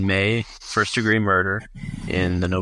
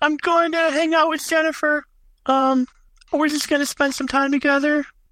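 put-on very high childlike voice. Voicing a kid character with the voice used for every kid, kid's voice. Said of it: "I use this as every kid's voice".

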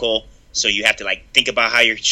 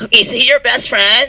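put-on valley girl voice, higher and louder; 13 semitones higher, 5 dB louder than usual. Imitating how they talked in high school: put-on valley girl voice. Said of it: "you were a blonde valley girl".

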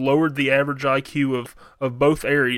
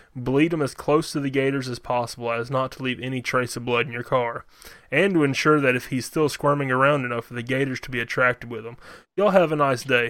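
normal talking voice

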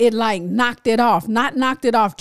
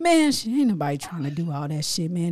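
mock mumbling under breath, lower and quieter; 5 semitones lower, 6 dB quieter than usual. Retelling how a partner grumbled about the paper: imitating someone muttering under breath. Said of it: "he'd start talking under his breath".

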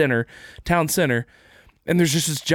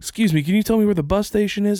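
put-on higher-pitched little-kid voice; 5 semitones higher than usual. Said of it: "a kid named Chad just being like".

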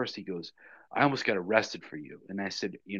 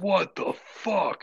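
put-on, very high-pitched, loud shout; 11 semitones higher, 5 dB louder than usual. Retelling what he yelled from inside the office, imitating him yelling. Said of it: "I hear him yelling that".

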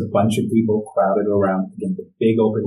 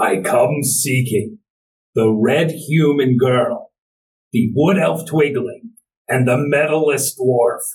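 mild, half-yelled calling out; 4 semitones higher than usual. The narrator voices a figure the players hear calling out, booming yell. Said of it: "you start to hear a booming voice yell".

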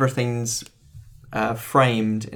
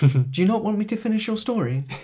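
put-on English accent, higher pitch; 10 semitones higher than usual. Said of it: "He does sound very English".

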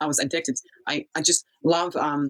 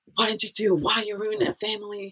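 high screaming, kept mild; 5 semitones higher than usual. Retelling a family fight, the speaker quotes an american mother, imitating a screaming mother. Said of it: "an American mother is screaming like".

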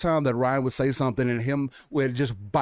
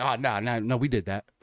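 real snarky, biting tone, acted out; 2 semitones lower than usual. Retelling how Todd Howard kept biting back: imitating Todd Howard's snarky retort. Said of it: "he would say it real snarky".

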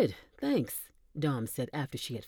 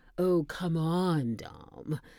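very slow drawl laced with sarcasm. A woman answers a man who just compared her to a Sith Lord: sarcastic. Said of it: "her voice laced with sarcasm".

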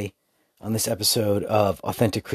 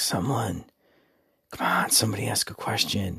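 soft hushed whisper under the breath. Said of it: "under his breath, kinda hushed".

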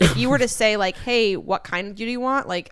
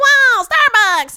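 shrill, very high, loud put-on voice; 13 semitones higher, 9 dB louder than usual. Describing a Starbucks trend in their generation, the speaker acts out a reaction in a put-on voice. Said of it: "I love this voice".

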